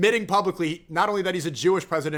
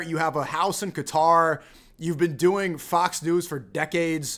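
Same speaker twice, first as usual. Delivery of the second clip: plain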